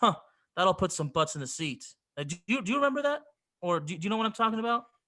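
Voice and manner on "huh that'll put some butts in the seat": mock, dry, sarcastic TV announcer voice. Retelling what the head announcer said on TV: imitating a sarcastic announcer. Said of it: "he would sarcastically say".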